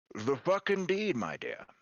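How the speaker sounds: put-on old, wizened man's voice. Voicing an old man who greets a player: old wizened man's voice. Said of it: "an old, wizened voice as an old man walks".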